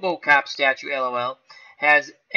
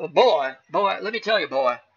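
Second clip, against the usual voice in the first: put-on cartoon rooster voice. Answering a chat request for a Looney Tunes character, Foghorn Leghorn impression. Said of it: "Foghorn Leghorn".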